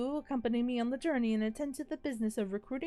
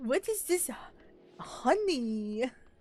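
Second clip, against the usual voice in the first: put-on French accent. Quoting a TikTok girl: imitating a French accent. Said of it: "that girl with the, the French accent".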